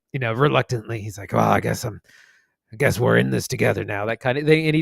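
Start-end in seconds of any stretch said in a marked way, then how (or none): 1.3-4.0 put-on gruff voice, much lower pitch. Speaker describing a movie gunman, doing Costner's super low gruff voice. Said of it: "He's a super low gruff thing".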